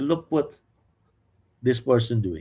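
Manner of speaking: usual speaking voice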